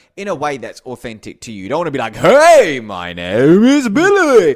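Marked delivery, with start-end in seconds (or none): 2.2-4.6 weird, very loud, drawn-out, shrill, swooping talking-toy voice. Speaker showing how you should not sound, weird talking toy voice. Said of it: "You'll sound like one of those weird toys".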